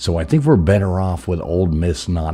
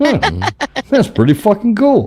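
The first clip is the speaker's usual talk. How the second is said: mock gloating, higher pitch and louder; 6 dB louder than usual. Acting out wearing the team hat after a win: imitating himself gloating. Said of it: "I do get to gloat a little bit".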